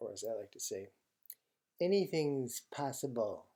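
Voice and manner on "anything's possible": proclaiming like a seventies showman or stage magician. Speaker advising on negotiation, saying a catchphrase as a Doug Henning impression. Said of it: "That is my impersonation of 1970s magician".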